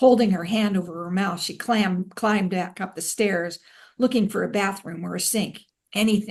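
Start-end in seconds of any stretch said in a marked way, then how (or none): none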